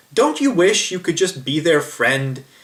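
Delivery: somewhat sarcastic, swooping sing-song delivery. Retelling what a guy said while watching a video: imitating a sarcastic remark. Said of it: "he said sort of sarcastically".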